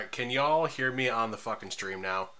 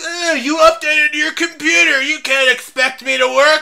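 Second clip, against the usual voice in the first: very high, shrill, loud animated cartoon-kid yell; 16 dB louder than usual. Speaker complaining to friends that an updated computer won't work, South Park voice. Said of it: "a South Park voice there?".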